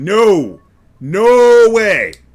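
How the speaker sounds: very loud, high, full-volume yelling. Gamer reacting to what just happened with the analog stick: yelling. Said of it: "because I am yelling".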